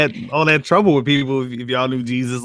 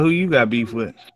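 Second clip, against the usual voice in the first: usual speaking voice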